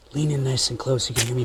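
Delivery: soft, hushed, whispered ASMR voice. Hosts open an ASMR segment of their show, soft ASMR whisper. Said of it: "Loading Ready Run A S M R".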